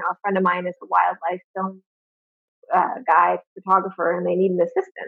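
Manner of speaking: ordinary talk, nothing marked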